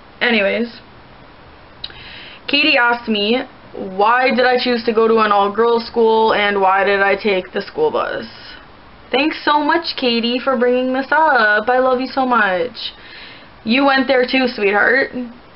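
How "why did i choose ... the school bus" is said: ordinary talk, nothing marked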